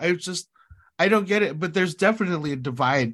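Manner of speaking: normal talking voice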